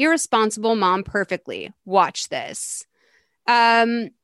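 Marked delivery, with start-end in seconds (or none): none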